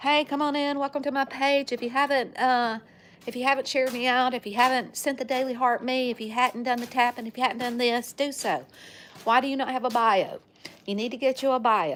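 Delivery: high, repetitive, broken-record patter in auctioneer style. Showing what own TikTok lives sound like: imitating own auctioneer-like patter. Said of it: "I'm an auctioneer".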